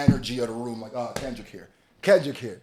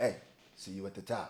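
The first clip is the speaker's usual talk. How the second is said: deep, very low, soft murmur under the breath; 7 semitones lower, 12 dB quieter than usual. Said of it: "Just in that [name] voice".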